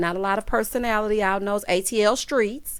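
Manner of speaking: ordinary delivery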